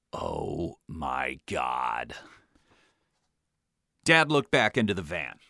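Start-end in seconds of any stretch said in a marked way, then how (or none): 0.1-2.1 exasperated mutter, low, slow and soft. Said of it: "and muttered".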